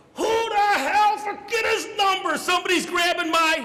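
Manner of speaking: acted-out shrieking, very high-pitched screaming yell. Retelling a football play, the fullback caught under a pile, imitating Polaris screaming. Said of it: "And he's screaming".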